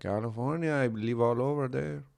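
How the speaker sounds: put-on typical, quintessential Mexican accent fully on. Retelling what a man in the car told them, in a mexican accent. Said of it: "This guy had the quintessential Mexican accent".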